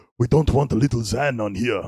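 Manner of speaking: very loud fake Russian accent. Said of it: "That's simply Russian".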